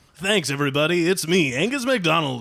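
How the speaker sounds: smooth on-air radio announcer voice. Retaking an introduction for the recording, in a new radio voice. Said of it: "and his new radio voice".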